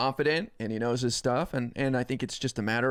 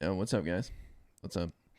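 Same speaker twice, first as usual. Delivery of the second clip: relaxed, low, laid-back, soft and easy; 5 semitones lower, 6 dB quieter than usual. Speaker showing how he'd sound talking normally on stream, chilled-out Tyler1 impression. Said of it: "He just chills".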